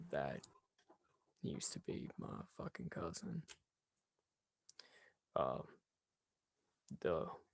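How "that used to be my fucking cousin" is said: hushed, slightly high whisper under the breath. Voicing a skeleton who serves a drink and leans over: whispering. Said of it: "he whispers over to you".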